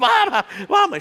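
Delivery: very high, loud, tearful sobbing and pleading. Retelling being left by the road as the mother turns back: retelling crying. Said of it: "I'm crying on the side of the road".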